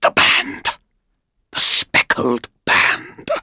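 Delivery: soft, hushed, barely voiced whisper. Spotting a speckled band around a seated man's forehead, a companion: whispered. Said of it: "whispered Holmes".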